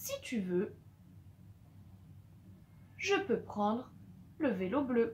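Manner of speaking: breathy whisper, short pause after si tu veux. Dictating a sentence, the comma marks a short pause after si tu veux. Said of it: "On marque une petite pause ici avec la virgule".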